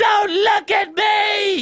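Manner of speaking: acted, very slow, high scream, "me" stretched long. Retelling how a sister ran out of the bathroom: imitating sister screaming.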